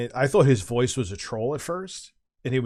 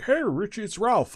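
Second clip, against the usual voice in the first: very high-pitched voice; 10 semitones higher than usual. Retelling calls from a caller, imitating Ralph's voice. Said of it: "This is how he talked".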